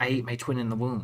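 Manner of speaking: hushed stage half-whisper with no voice. Retelling a quiet woman's line from a movie, imitating a half-whisper. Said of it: "Like she whispers it".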